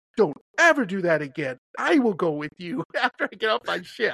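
firm, adamant, insistent, no-arguing delivery. Retelling an older southern woman's insistent warning: imitating an adamant woman. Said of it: "adamant about it".

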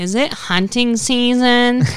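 high, loud and rude delivery. Retelling a woman questioning them about hunting season; imitating a rude Karen voice. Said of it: "She had the rude, like, Karen voice".

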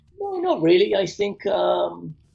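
pitch jumps very high. Answering whether they prefer television or film, voice going high. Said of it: "don't know why my voice went high there".

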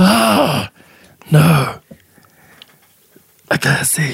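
high undead zombie voice. Describing a fight, voicing the zombie's reaction in a zombie voice. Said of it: "that's [name]'s zombie voice".

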